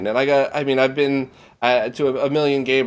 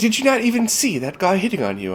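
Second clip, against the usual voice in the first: put-on heavy, laid-on British accent, pitched up; 6 semitones higher than usual. Retelling what a friend said to the speaker: imitating a friend's thick british accent. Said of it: "just thick British accent".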